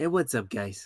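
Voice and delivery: put-on relaxed, chill YouTuber voice. Imitating a YouTuber's intro greeting: imitating Cry's cool chill voice. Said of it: "the cool voice".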